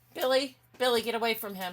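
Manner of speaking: high-pitched, loud yelling. Crafting on camera, telling a dog to get away from another: yelling at a dog. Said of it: "I had to yell at my dog".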